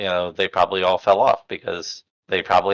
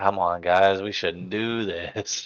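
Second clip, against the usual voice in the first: put-on soft, dull, dazed, dopey stoner voice; 5 dB quieter than usual. Describing how a character sounds in the audiobook, stoner voice. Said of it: "He's so much like a stoner".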